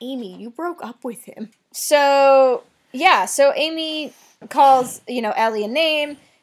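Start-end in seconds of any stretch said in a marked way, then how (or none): 0.0-1.5 put-on fairly calm, even, soft-spoken voice. Recapping a show scene, the speaker quotes a character's response: mock-calm reply. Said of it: "responds in a fairly calm tone".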